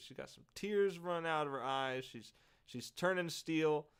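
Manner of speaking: ordinary delivery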